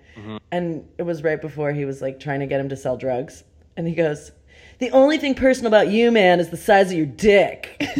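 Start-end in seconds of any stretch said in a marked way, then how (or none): 4.8-7.9 very loud, pitched-up insulting, jabbing tone. Quoting a line one character says to another in a scene: mock insulting tone. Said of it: "He said it in an insulting tone".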